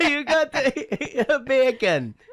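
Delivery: high, slow laughing voice, mock accent.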